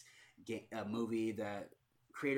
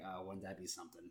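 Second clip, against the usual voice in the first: put-on, sly, smug, self-satisfied, wry tone; 3 semitones lower, 8 dB quieter than usual. Retelling a character's reply in a movie trailer: imitating a smirking remark. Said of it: "the guy's got a smirk on his face".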